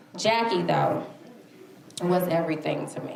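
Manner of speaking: emotional, choked-up delivery. Author talking about a close friend described in the book: choked up. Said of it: "I'm getting choked up".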